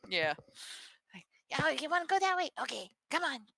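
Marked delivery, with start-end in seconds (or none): 1.6-3.4 put-on taunting, challenging young boy voice. Voicing a character while playing with friends, in a young boy voice. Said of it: "trying to do like a more young boy sound".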